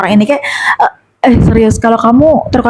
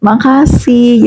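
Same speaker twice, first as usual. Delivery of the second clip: coquettish, cute little voice. Recalling a prayer of thanks, put-on cute coquettish voice. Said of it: "dengan nadaku yang centil, dengan nadaku yang imut".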